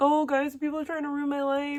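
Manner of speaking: sobbing, whining voice. Speaker contrasting herself with Victoria, whom she heard crying on here; mock crying whine. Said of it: "I've heard Victoria come on here crying".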